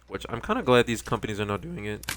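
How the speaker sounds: voice cracking. Commenting on a game remake while playing: voice cracking. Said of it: "Voice crack".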